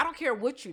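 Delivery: ordinary talk, nothing marked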